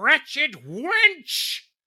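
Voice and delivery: very high, swooping, shrill furious screech, wench drawn out. Claude runs to a broken window after a woman escapes; screaming in frustration. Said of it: "Claude screamed in frustration".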